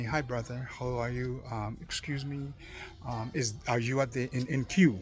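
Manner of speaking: polite, humble, deferential, respectful tone. Retelling what a man in a queue said to the speaker, imitating a humble, respectful tone. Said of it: "a humble, very respecting tone of voice".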